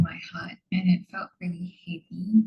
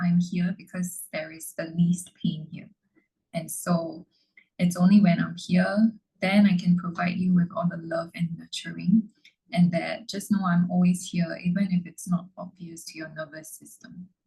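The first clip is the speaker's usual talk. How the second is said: ordinary talk, nothing marked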